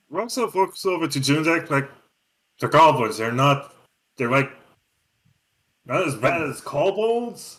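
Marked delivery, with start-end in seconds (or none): 2.6-7.6 mocking, dry, sarcastic tone. Voicing Roxo as he looks over at Junzek: sarcastic. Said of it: "I'm actually saying this sarcastically".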